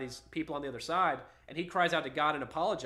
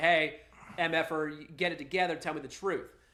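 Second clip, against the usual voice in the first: ordinary delivery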